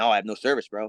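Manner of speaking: ordinary talk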